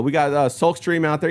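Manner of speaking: normal talking voice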